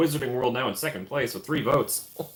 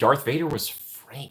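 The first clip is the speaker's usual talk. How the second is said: usual speaking voice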